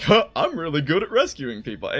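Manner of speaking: bad dumb voice with swooping, swinging pitch. Describing how two characters banter, the speaker quotes Chad in a bad Chad impression. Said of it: "I'm doing a bad impression of it".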